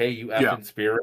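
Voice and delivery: put-on disrespectful taunting. Imitating a ghost hunter talking to a spirit: imitating disrespectful taunting. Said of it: "straight disrespectful".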